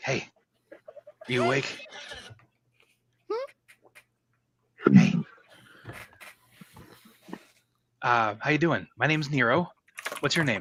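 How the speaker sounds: soft, gentle, very quiet, hushed, barely-there voice. Nero taps the nearest plant to wake it, speaking really quietly. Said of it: "really quietly".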